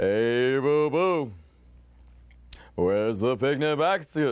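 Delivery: easygoing, slow, drawn-out cartoon bear voice. Calling an auction with a minute left on the clock, doing a Yogi Bear voice. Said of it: "That was the best I could do".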